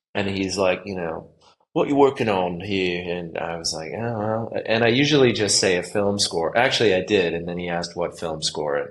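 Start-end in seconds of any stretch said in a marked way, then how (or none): 1.7-3.1 put-on touch of London Cockney accent. Retelling what a man you met said to you, in a cockney accent. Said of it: "a little bit of a Cockney accent".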